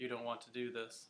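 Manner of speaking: flat, level monotone on one unvaried pitch. Demonstrating a way of speaking you don't want: monotone. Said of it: "This is an example of speaking in monotone".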